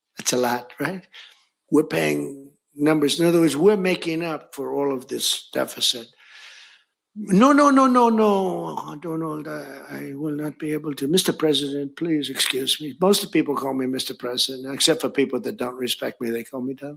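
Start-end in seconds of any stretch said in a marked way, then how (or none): 7.2-13.0 put-on slow French accent with each "no" drawn out. Retelling a call where Emmanuel Macron refuses to raise prices: imitating Macron's French accent. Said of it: "I love the French accent".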